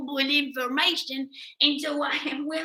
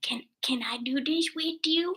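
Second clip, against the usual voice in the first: whispered voice; 4 dB quieter than usual. Retelling a man who asks to join in: imitating a whisper. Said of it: "he whispered to me".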